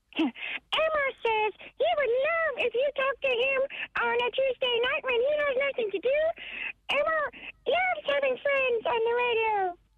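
very high, squeaky little puppet voice. On the radio, asked to show how good yours is, do an Elmo impression. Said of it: "give us it there".

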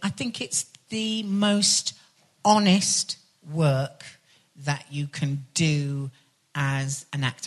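very slow, weighty, deliberate, halting, grand delivery. An actor talking about playing a mythical creature for children, speaking slow and deliberate. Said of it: "I'm saying that slowly and deliberately".

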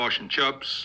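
New Zealand accent on fish and chips. Explaining fish and chips to americans, saying it in a new zealand accent. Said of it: "In New Zealand".

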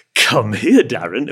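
loud, playful, jokey cartoon-wolf voice. Retelling how a man called the speaker over, in a jokey cartoon-wolf voice. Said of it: "a joke version of a cartoon wolf".

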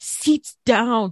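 put-on shouting. Retelling the crew's orders to passengers: imitating screaming flight crew. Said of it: "the whole crew were literally screaming".

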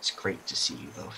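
hushed, very soft, whispered aside. Retelling how a man walked up to two people and greeted them: somewhat quietly. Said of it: "sort of quietly says".

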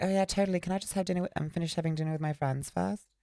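put-on posh British accent. Retelling a woman's reply to a fan's photo request, in a Downton Abbey posh British accent. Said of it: "Downton Abbey Victorian".

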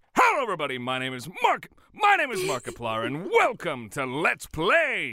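loud, swooping mock announcer, shouting every third word. Showing how the character parodies Markiplier: Markiplier parody voice. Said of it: "it's like a parody".

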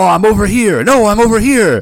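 loud shout. Recapping a scene where the others can't tell where the voice comes from: retelling Sasuke shouting. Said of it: "sort of like and shouting".

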